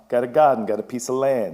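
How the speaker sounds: slight Boston accent creeping in. Speaker talks to an audience about family habits, with a Boston accent slipping out. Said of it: "Boston accent just sort of trying to creep out of me".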